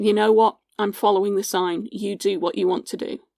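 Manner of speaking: normal talking voice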